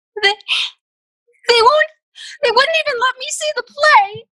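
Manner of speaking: very high, sobbing through tears. Found crying in the basement, Ella answers Mister Snell, tearful and sobbing. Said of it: "why are you crying?".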